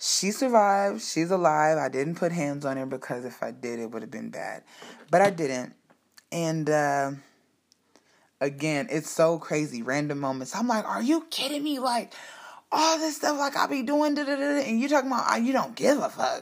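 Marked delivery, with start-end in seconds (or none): 10.9-16.4 put-on angry outburst, very high and shrill. Retelling an argument after hearing she didn't care: imitating own angry yelling. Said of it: "I start yelling".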